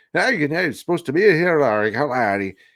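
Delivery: put-on garbled, run-together, jabbering Irish or Scottish accent. Retelling a scene, imitating a henchman's line: jabbering Irish or Scottish accent. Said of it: "he says it all like jabbered".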